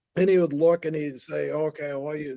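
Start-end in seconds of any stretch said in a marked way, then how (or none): 1.5-2.4 put-on thick Japanese accent, quieter. Retelling what the professor said at the table: imitating Toshi's thick Japanese accent. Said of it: "he had a very thick Japanese accent".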